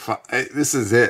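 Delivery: ordinary talk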